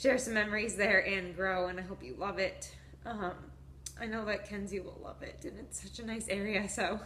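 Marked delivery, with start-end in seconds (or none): 0.0-2.7 openly emotional with a raised voice. Thanking listeners for sticking with them, the speaker sounds emotional. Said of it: "I'm getting emotional".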